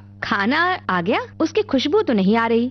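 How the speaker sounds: ordinary delivery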